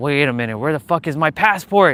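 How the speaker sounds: mock panicked freaking out. Retelling losing a passport at the airport: retelling own panic. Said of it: "I was freaking out".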